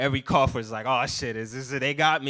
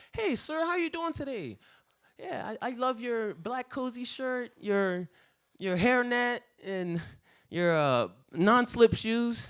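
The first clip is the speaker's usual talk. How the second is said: high, sweetly polite, overly nice voice; 10 semitones higher, 4 dB quieter than usual. Retelling how a customer might order, imitating a very nice customer. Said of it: "you could come up to me the nicest way".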